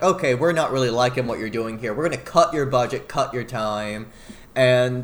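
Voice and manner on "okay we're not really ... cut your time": plain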